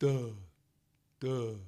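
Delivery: put-on dopey, stupid-sounding voice with "duh". Demonstrating a sound that pulls the larynx down, a stupid-sounding duh. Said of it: "a real stupid duh".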